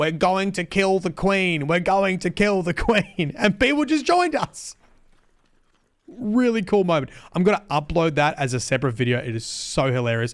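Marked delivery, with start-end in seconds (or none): 0.0-3.3 screaming, calling out loud like a rallying call. Recalling screaming at players over the game microphone, retelling screaming at people. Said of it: "I started screaming at people".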